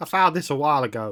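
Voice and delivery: bad put-on woman's voice. Reading a story aloud, voicing Eliza's line in a bad Eliza voice. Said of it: "That was a really bad voice for Eliza".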